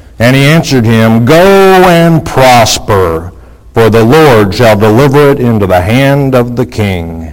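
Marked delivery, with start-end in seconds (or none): none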